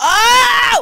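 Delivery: screaming. Streaming a game, suddenly screaming at a man who is not dressed. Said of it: "I'm so sorry for screaming like this".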